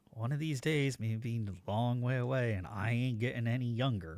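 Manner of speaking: low, grumbling mutter under the breath. Voicing a character after a figure vanishes in smoke: muttering under breath. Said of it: "I'll mutter something under my breath like".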